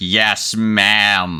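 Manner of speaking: mechanical robotic voice. Describing one of the children answering you, in a robotic voice. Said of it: "with a very like robotic voice just goes like".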